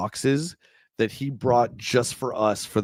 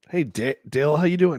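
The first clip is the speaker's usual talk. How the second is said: throat catching, choking and coughing while talking; 4 semitones higher than usual. Greeting dale mid-conversation while playing, choking and coughing. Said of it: "I'm choking here".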